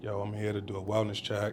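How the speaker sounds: ordinary delivery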